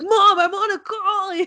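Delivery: high-pitched, loud, slow yell. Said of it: "he was, like, yelling at his mom".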